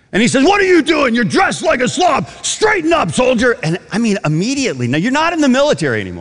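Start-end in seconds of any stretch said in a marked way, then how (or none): 0.5-3.6 mock very high, spitting drill-sergeant bark. Speaker acting out their drill sergeant scolding them, imitating a yelling drill sergeant. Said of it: "he's spitting when he's yelling".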